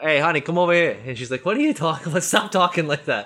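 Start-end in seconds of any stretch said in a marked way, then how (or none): 0.0-1.0 loud New Jersey mobster voice with full wise-guy swagger. Retelling how they now talk to her, the speaker slips into a Tony Soprano voice. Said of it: "I talk like I'm fucking Tony Soprano now".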